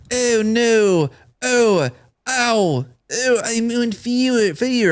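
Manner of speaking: very slow, drawn-out pained cries, every word dragged. Retelling a burn scene with an underwhelmed reaction: Obi-Wan impression. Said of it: "impression of Obi-Wan".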